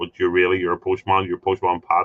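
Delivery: ordinary delivery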